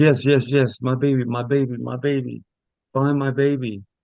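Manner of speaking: put-on crying and screaming. Retelling what a woman said while searching for her baby, imitating crying and screaming. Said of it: "she stepped crying is, and screaming".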